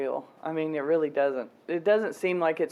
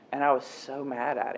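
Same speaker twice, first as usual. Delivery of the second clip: usual speaking voice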